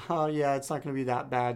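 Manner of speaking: ordinary talk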